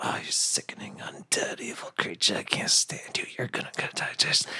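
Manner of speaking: soft, whispered, muttered string of words. Playing a character who insults an undead creature: whispering insults. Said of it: "I start whispering at it".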